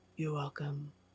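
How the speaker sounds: very quiet, deep, hushed voice barely above a murmur. Voicing a being speaking inside the heads of the players: deep voice of Gargoth. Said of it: "the deep voice of Gargoth".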